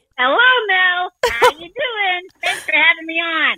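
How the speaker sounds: very high-pitched cartoon voice. Greeting the host Mel as Larry the Cucumber: Larry the Cucumber voice. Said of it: "Or should I say Larry?".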